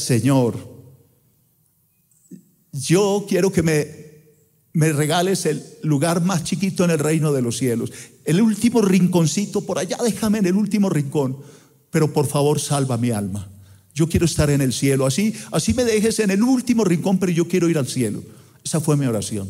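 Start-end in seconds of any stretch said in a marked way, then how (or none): none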